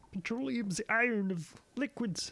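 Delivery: put-on frog-puppet voice, very high-pitched. Asked for a different voice, repeating the line in Kermit the Frog voice. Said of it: "That's actually not a bad Kermit".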